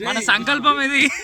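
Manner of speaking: put-on high rallying shout.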